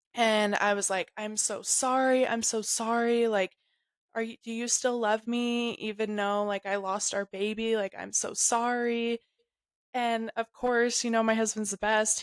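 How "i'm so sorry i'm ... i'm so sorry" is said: put-on uncontrolled sobbing while talking. Recounting apologizing to the husband after losing the baby, retelling a sobbing apology. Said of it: "uncontrollably sobbing".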